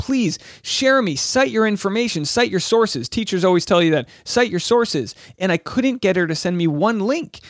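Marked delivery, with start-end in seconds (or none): 0.0-3.1 high, earnest, begging, pleading tone. Retelling your plea to a u.s. history professor who said you were wrong: retelling own begging. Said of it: "I just begged them and pleaded with them".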